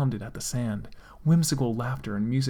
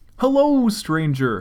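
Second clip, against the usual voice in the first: bright, cheerful, higher and louder; 7 semitones higher, 9 dB louder than usual. A cashier greets the only customer in a gun shop, cheerful. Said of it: "cheered the cashier cheerfully".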